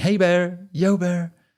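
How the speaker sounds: very high, really loud, drawn-out, scared shout. Recalling being scared of bears, retelling a really loud shout. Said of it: "like really loud".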